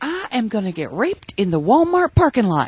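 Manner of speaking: acted, high, sudden alarmed outburst, belted out. Retelling what she suddenly belted out while standing over them, retelling her belting it out. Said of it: "she suddenly belts out".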